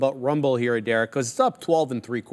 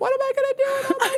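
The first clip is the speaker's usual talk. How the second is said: put-on very high, wailing, crying, panicked teen voice. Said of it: "I like that voice".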